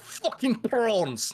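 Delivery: put-on very high, broad South African-accented shriek. Talking about the movie, quoting the actor with a Sharlto Copley impression, mock scream. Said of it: "because he's like".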